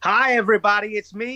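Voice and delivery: put-on American accent. Asked by the host to show an American accent, greeting everybody in an American accent. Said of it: "let's hear an American accent from you".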